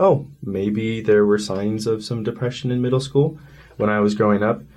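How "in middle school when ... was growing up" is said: ordinary talk, nothing marked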